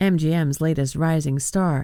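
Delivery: ordinary delivery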